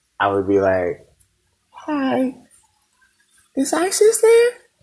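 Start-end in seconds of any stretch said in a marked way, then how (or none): 1.7-4.5 very high fake female voice, slow and swooping. Retelling calling his girlfriend's house as a teen, asking her mom: fake female voice as Teresa. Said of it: "I had to adopt a female's voice".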